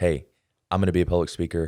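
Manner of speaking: ordinary talk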